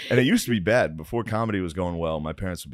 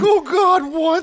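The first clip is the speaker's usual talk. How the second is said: very high, very loud breaking voice; 9 dB louder than usual. Retelling a drunk dad's reaction upstairs after mom was knocked out: imitating his voice cracking. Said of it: "You can hear his voice crack".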